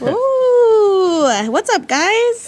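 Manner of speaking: mild, high, unthreatening voice, drawn-out "ooh". Revealing the final tradition in a game, in a not very intimidating voice. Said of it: "not a very intimidating voice".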